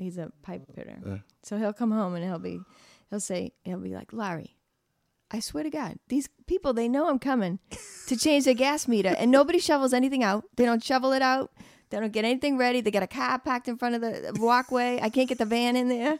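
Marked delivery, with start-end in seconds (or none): 4.1-16.2 fast, high-pitched male ranting voice. Acting out her pipe-fitter husband coming home from work, imitating her husband. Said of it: "I can imitate my husband".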